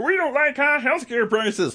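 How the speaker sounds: high, slow, drawn-out mocking voice. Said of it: "Democrats are always like".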